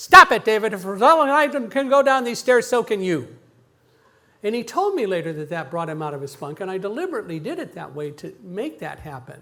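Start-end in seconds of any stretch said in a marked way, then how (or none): 0.0-3.3 very loud, stern, scolding teacher-style yell. Retelling what he told David on the stairs: retelling a teacher-voice yell. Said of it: "in my best teacher voice, yelling at students".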